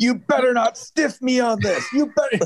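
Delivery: put-on very high-pitched, shrill yell. Retelling how an old school guy in a match pointed at his opponent, imitating someone yelling. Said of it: "he's yelling at Nick".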